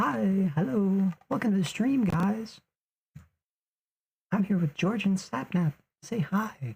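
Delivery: squeaky, made-up, very high-pitched voice. Voicing someone whose voice he doesn't know: put-on high-pitched voice. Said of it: "I'm gonna give him a high-pitched voice".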